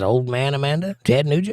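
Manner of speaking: ordinary talk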